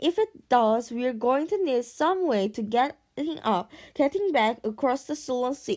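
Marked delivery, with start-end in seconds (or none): none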